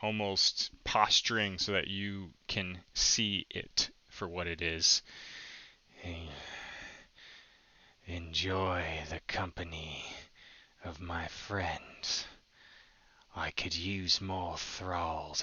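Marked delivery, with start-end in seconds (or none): 6.0-15.4 eerie, reverberating, low, hushed, creepy echoing voice. Voicing the creature's line from the scene in a creepy echoing voice. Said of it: "this like echoing".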